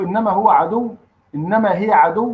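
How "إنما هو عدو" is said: normal talking voice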